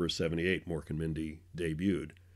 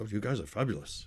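heavy, laid-on, put-on English accent; 4 semitones higher than usual. Showing how Robin talked on first meeting: Robin Williams impression, English-sounding. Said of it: "I thought he was English".

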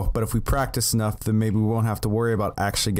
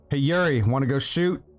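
breezy, casual, called out in normal voice; 4 semitones higher than usual. In a role-play scene, a character calls to a man lost in thought, pretty loud call. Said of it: "I just say pretty loudly".

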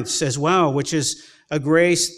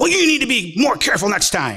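put-on young man yelling, higher; 5 semitones higher than usual. Retelling how a young driver shouted about his hit car: imitating a young man yelling. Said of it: "a twenty-year-old yell at you".

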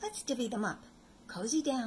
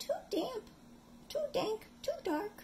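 very high, tiny squeaky mouse voice; 14 semitones higher than usual. Narrator reading a bedtime story gives the little mouse's line, squeaky mouse voice. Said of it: "Mouse squeaks".

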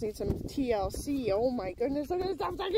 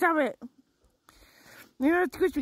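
put-on pet voice, protesting and pushing back; 3 semitones higher, 4 dB louder than usual. Voicing the pet telling the speaker to stop: voicing the pet protesting. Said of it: "She's like".

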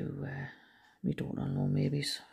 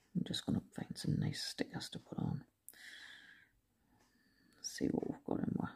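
quiet, hushed, half-whispered muttering; 9 dB quieter than usual. Picking stickers from a collection while talking to oneself, talking quietly. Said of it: "I seem to be talking quiet".

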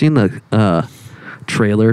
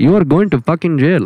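put-on Indian accent, higher and faster; 7 semitones higher than usual. Quoting one of your favorite lines, in an indian accent. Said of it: "I love making an Indian accent so much".

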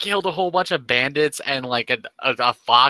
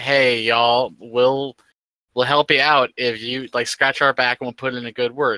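usual speaking voice

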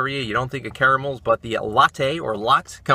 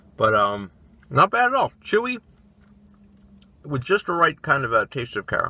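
halting words broken up by chewing, mouth full. Reviewing caramels while eating one: talking while chewing. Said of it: "I'm chewing on it and talking".

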